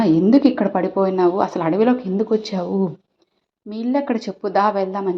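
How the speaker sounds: ordinary delivery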